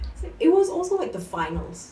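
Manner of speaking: high-pitched, loud, very excited. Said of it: "I'm just getting really excited about it".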